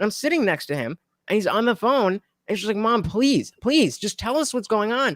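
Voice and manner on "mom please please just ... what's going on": imploring, begging, pleading voice. Retelling a friend on the phone with his mom at the hospital, imitating someone begging.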